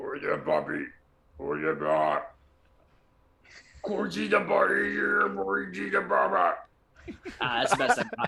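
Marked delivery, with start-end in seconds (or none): 0.0-6.6 slow, rough croak with swooping pitch. Doing an impression on request, Jabba the Hutt voice. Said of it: "impression time for Jabba the Hutt".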